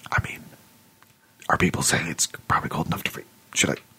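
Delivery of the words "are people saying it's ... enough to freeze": hushed, conspiratorial whisper. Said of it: "whispering conspiratorially".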